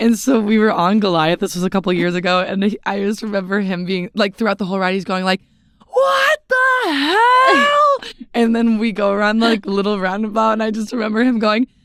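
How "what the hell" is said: very high shrieking talk, hell drawn out. Recalling a companion on the Goliath ride, imitating his scream-talking. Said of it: "he scream talks".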